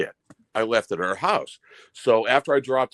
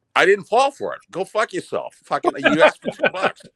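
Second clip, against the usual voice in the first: put-on heavy, animated Boston accent; 8 semitones higher, 3 dB louder than usual. Telling a story about refusing two bucks, the storyteller's Boston accent comes out. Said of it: "Boston's really coming out of your accent now".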